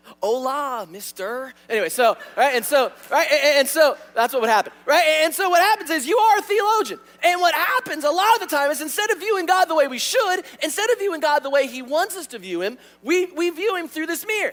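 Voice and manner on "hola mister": Spanish spoken with a put-on Southern accent. Imitating how Chris would speak Spanish: imitating Chris in a Southern accent. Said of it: "it would come out with a Southern accent".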